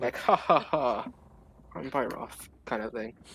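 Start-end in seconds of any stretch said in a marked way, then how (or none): 0.2-2.3 slow, drawn-out, friendly ha-ha. Patting another character's back while imitating Byroth: imitating Byroth, friendly. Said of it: "in a Byrothi friendly manner".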